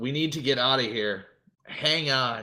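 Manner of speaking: loud, put-on in-character shouting. In a tabletop role-play, a character turns to a woman and yells. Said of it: "and yells out".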